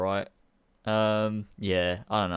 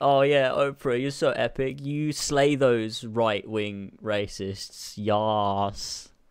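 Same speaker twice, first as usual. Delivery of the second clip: ordinary talk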